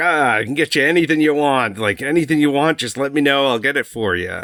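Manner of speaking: heavy put-on New York or Chicago accent. Retelling a club host's welcome: imitating a thick chicago or new york accent. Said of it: "he's got the thickest accent, like, I don't know if it's Chicago or New York".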